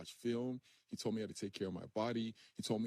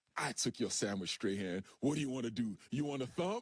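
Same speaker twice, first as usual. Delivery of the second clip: put-on mocking, taunting voice; 2 semitones higher, 4 dB louder than usual. Retelling the sandwich story, the speaker voices Big Bob answering Strahan: imitating Big Bob's taunt. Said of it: "And then Big Bob comes out. He's like".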